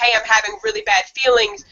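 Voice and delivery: ordinary delivery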